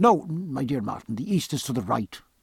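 ordinary delivery

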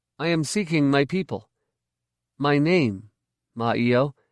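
plain

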